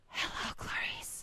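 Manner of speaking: imitated breathy whisper. Retelling how a coworker crept up behind and whispered: imitating a breathy whisper. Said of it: "She gets right up behind me without me knowing and whispers".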